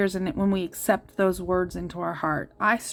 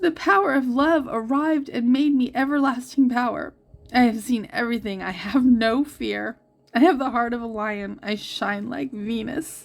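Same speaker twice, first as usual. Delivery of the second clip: voice catching and choking up, on the verge of crying; 4 semitones higher, 4 dB louder than usual. Reading aloud the Rumi quote on a card, choking up, near tears. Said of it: "I'm going to cry".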